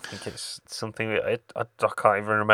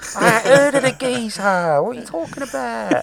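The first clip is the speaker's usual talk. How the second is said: very high, loud, shrill, mocking southern accent; 14 semitones higher, 7 dB louder than usual. Mimicking another speaker's line: imitating a southern-sounding friend. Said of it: "he sounded so southern".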